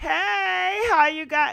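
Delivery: put-on lively party-girl voice, very high and loud. Reminiscing about a woman and imitating her voice. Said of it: "reminisce and hear her voice?".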